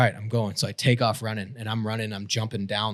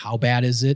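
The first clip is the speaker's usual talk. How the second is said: loud, acted-out yelling, screamed across a distance; 2 semitones higher, 5 dB louder than usual. Retelling shouting back across the way after hearing man down: imitating own scream. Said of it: "I start screaming back".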